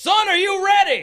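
shrill, very loud, high-pitched yell. Voicing a character asking a player whose hearing is returning if ready: yelling. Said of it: "Don't need to yell".

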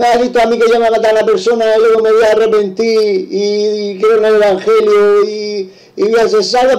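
high, heavily sarcastic tone. A man retells what his wife said to him, imitating her sarcasm. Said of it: "con sarcasmo me lo dijo así".

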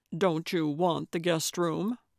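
ordinary delivery

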